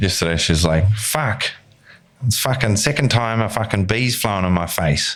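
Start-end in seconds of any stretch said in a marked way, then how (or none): 0.9-5.2 brash, put-on Australian accent. Retelling a complaint about a bee: imitating a friend's brash Aussie accent. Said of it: "a brash Aussie accent".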